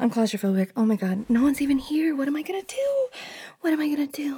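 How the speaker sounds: full-on frantic panic, swooping, losing control. Alone and claustrophobic, realizing no one is even here: freaking out. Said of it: "I'm freaking out".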